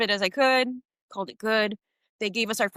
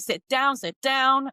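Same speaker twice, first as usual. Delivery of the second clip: put-on stern yelling with words drawn out; 3 semitones higher than usual. Retelling how a guard reacted when they got up to stretch: imitating a guard yelling. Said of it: "The guard starts yelling at me".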